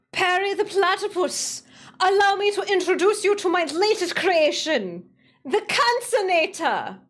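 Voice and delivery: put-on high-pitched voice in a Russian accent. Speaker hyping up, then doing a villain's line to Perry the platypus in a Doofenshmirtz Russian accent. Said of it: "in the Russian accent".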